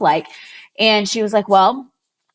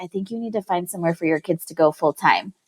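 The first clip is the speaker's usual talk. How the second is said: soft, hushed stage whisper; 2 semitones lower, 5 dB quieter than usual. Retelling an elder's words: imitating a half-whisper. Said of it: "whispered to me".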